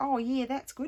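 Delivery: strong Australian accent. Repeating the phrase to show how it sounded: very australian accent. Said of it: "That sounded very Australian".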